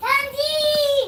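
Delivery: loud high shout.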